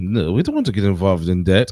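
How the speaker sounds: swooping, fake put-on French accent. Imitating France refusing to get involved: put-on French accent. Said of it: "France always be like".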